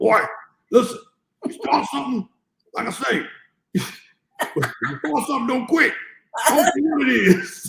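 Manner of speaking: gruff, loud, very high dad voice. Retelling a lesson from dad as a child: imitating dad's gruff voice. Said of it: "a real gruffy voice".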